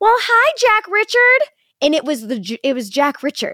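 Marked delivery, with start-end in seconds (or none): 0.0-1.5 put-on sweet little old lady voice, very high-pitched. Retelling a stranger at a stoplight greeting a child: imitating a sweet old lady. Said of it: "a sweet old Karen goes".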